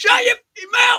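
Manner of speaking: mock shrill, very high, over-the-top Cockney yell. Retelling Alex shouting from across the street, imitating Alex's extreme Cockney shout. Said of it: "shout in the most extreme Cockney accent".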